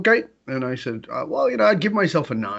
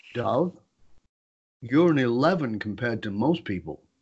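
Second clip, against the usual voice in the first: acted, very calm, steady, unruffled, even voice; 2 semitones lower, 4 dB quieter than usual. Speaker retelling what his wife said to him: imitating wife speaking calmly. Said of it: "Wife very calmly looks at me and says".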